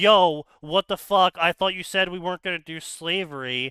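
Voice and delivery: mock straight-out, blunt, bold outburst. Retelling how a game companion reacts in conversation, imitating a blunt character. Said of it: "bold character type or a, a blunt character type".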